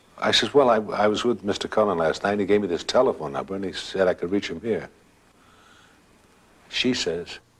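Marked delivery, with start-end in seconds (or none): none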